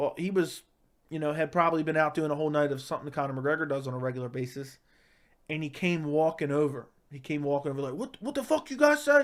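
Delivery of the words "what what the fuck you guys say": mock very high, mad, aggressive, confrontational voice. Retelling a man who walked over to the group, imitating an aggressive, angry demand. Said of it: "All aggressive, all mad".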